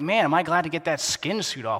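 ordinary talk

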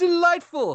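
high, loud, slow delighted exclamation.

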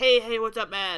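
put-on Jersey gangster accent. Showing a kind of voice while talking about voices, jersey gangster voice. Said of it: "like a Jersey gangster voice".

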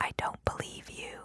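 soft whisper spoken right into the ear. Retelling what an actor said in her ear after a take: imitating a whisper. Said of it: "he whispered in my ear".

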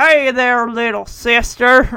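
put-on, drawling cowboy voice. Imitating a dad doing his usual line: John Wayne impression. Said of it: "my dad would do a John Wayne impression".

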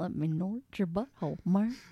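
flawless goofy cartoon dog voice impression. Joking about a game cutscene with another speaker: Goofy voice. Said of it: "You can do a flawless Goofy impression".

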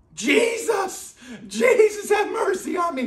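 very high, frantic, desperate shriek. Speaker retells a man crying out louder and louder: retelling a desperate shriek. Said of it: "he screamed like a shriek".

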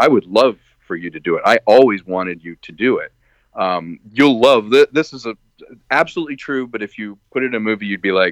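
ordinary delivery

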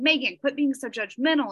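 ordinary talk

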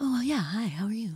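pleasant, extra-nice, friendly nice-guy voice. Imitating how a very nice guy talks: imitating a very nice guy's voice. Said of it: "he talks like".

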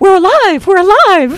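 high, loud, joyful yell.

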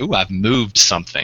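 ordinary talk

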